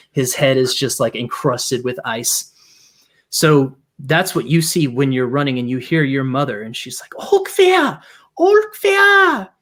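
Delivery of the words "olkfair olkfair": very high, loud, carrying call. Narrating a game, voicing the player's mother calling to them: mother calling out. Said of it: "You hear her calling you".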